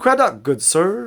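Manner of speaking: calling out in a high, hopeful voice. A resident calls out to you as you approach, in a high voice. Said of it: "calls out a high voice".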